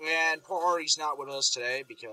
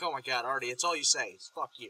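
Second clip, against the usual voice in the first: usual speaking voice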